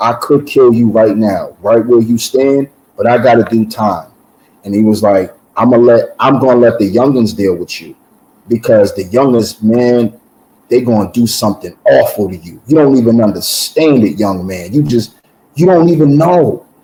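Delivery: ordinary talk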